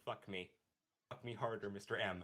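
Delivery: low, flat, utterly expressionless deadpan. Retelling a movie scene where a woman appears in Jim's head, retelling a deadpan line. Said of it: "with a deadpan voice".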